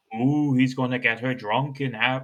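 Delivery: put-on Irish accent. Retelling what a driver said about a woman, the speaker uses an Irish accent. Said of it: "Why am I giving him an Irish?".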